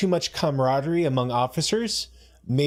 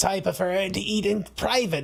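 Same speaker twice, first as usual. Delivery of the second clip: high, eerie, creepy possessed voice; 5 semitones higher than usual. Recapping an episode, quoting the possessed linguist in a creepy possessed voice. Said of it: "she's all creepy voice".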